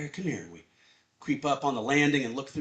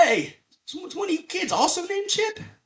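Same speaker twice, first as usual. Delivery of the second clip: put-on, very high, loud, boozy drunken call; 6 dB louder than usual. Retelling a man calling to kids in a corner: imitating a drunk man. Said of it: "his own drunkenness".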